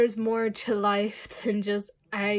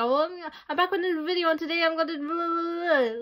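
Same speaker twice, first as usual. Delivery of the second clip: rattled-off, rushed, pitched-up rapid-fire patter; 8 semitones higher than usual. Imitating own video intros, the way they are said: imitating own fast talking. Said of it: "I talk very fast".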